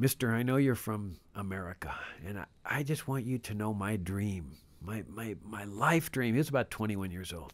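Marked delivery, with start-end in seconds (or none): 0.0-6.3 quieter put-on broken-English speech. Speaker recounting a young man who took him aside, imitating broken English. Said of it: "he speaks English in broken English".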